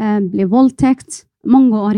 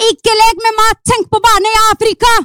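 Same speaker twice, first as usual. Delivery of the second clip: shrill, very high-pitched scolding tone; 12 semitones higher than usual. Recalling telling off children playing with food: imitating own scolding. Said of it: "jeg begynte å kjefte på dem".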